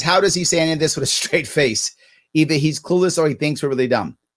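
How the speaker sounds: ordinary delivery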